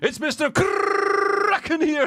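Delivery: very high, very slow, drawn-out trilled R. Imagining the commenter's video intro, rolling the R: Mister Kraken impression. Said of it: "Can imagine on his next video him going".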